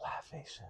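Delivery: very soft, breathy, barely voiced whisper. Retelling what a man whispered to the other speaker: imitating someone whispering. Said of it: "then he whispered to you".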